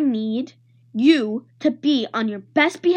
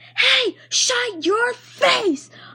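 slow, very high, drawn-out hollered outburst; 11 semitones higher than usual. A child woken too early by a screaming baby brother, hollering. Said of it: "I hollered".

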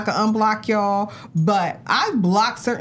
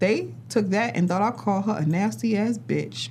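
normal talking voice

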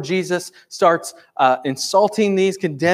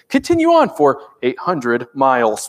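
automated navigation announcement voice; 5 semitones lower than usual. Describing driving with phone navigation, the speaker mimics a GPS navigation voice. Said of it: "I want to be that GPS voice that says".

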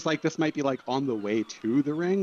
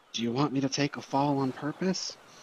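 hushed whisper. As Boris gets closer, the character speaks just to Boris: whisper. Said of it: "in a whisper".

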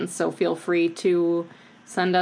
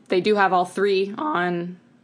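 voice cracking. Talking to viewers about a movie series, voice cracking. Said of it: "my voice cracked".

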